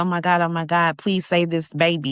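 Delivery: put-on panicked, pleading voice. Retelling reading a scene in a book, retelling own panicked plea. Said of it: "that's when I started panicking 'cause I'm like".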